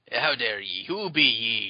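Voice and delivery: stagey put-on pirate voice. Reading a pirate's line aloud: pirate voice. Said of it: "said Kuro Pirate".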